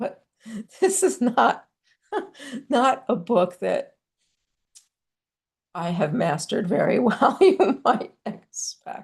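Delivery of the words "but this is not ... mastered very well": talking through laughter, higher. Showing a household book to listeners, laughing while talking. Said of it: "excuse me for laughing".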